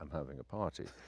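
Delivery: mock quiet, dead-serious, hushed voice. Retelling insisting to Ram after arriving in Greece, in a serious voice. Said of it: "see my serious voice then?".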